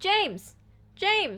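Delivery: put-on, high, shrieked scream. Retelling a scene where a woman screams her son's name, retelling a scream of James. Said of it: "I'm gonna scream your name very loud in your face".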